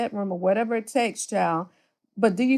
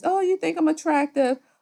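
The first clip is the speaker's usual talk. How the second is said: put-on coy, high, childlike baby voice; 6 semitones higher than usual. Imitating how she fishes for compliments, baby voice. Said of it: "You know how she does that baby voice".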